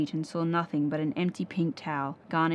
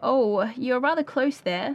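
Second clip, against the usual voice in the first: trembling, wavering, high and raised voice; 7 semitones higher, 5 dB louder than usual. Molly speaks to a panther leaning in close to her face, tremulous. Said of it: "said Molly tremulously".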